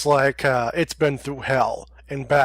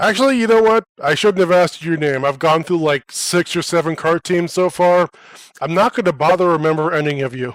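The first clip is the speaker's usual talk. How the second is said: offhand, couldn't-care-less, dismissive tone; 2 semitones higher than usual. Timothy answers the group's introductions, voice booming. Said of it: "a dwarf enters the room, / and his voice booms over the commotion of the 100 drunks. / and his voice booms over the commotion of the 100 drunks. / my name is Timothy".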